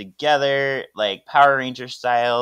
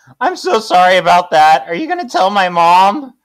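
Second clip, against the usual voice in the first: very loud, high put-on teenage boy voice; 7 semitones higher, 9 dB louder than usual. Reading a scene aloud, voicing a teenage character: put-on teenage boy voice. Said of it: "I'm gonna give him a voice".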